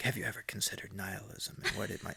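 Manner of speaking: put-on hushed dramatic tone. Imitating a video narrator's line: imitating a dramatic hushed narrator. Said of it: "says things in a dramatic, hushed tone of voice".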